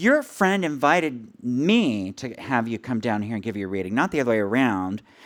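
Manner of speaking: ordinary talk, nothing marked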